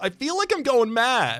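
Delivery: very high, stretched, drawn-out yell. Player commenting on an odd game run, yelling. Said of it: "I didn't mean to yell".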